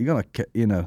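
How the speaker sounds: ordinary delivery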